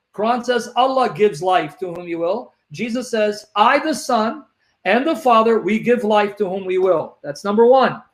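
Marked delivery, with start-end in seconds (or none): none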